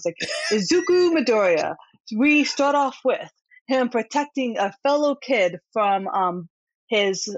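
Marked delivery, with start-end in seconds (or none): 0.5-5.6 hype announcer voice with big delivery. Speaker introducing an anime's main character: announcer voice. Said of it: "I have to use my announcer voice".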